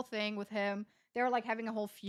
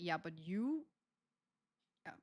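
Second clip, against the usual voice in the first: catty, snide, put-on mean-girl attitude; 4 semitones lower, 9 dB quieter than usual. Retelling how someone confronted the speaker for being mad at them, mimicking a mean-girl tone. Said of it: "she said it in such a like mean girl vibe".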